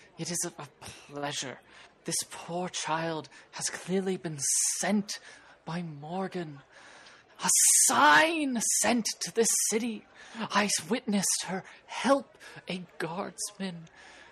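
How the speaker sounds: loud, tipsy dwarf voice, run-on rambling. Game master voices the dwarf from the Hungry Door Tavern: drunk dwarf voice. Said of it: "The dwarf from the Hungry Door Tavern looks at you. / I was drinking, and then she just sat down next to me, and I have been in a sort of a rut lately, and I've been just going in circles, felt like I".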